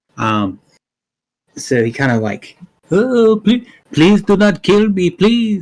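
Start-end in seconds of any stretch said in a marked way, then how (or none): 2.9-5.6 feigned terrified pleading, much higher, louder. A character down on the ground pretends to fear a demonic creature, fake terrified pleading. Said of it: "like he's terrified".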